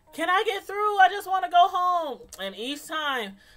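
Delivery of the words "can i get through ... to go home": high-pitched loud yelling. Speaker reenacts yelling out the car door at each intersection: retelling a yell. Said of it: "just open the door and start yelling like".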